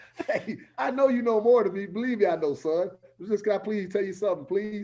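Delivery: put-on sarcastic begging tone. Retelling how they talk to their son: imitating own sarcastic pleading. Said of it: "you hit him with the sarcasm".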